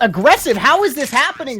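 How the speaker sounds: put-on high squealing, excited little boy voice.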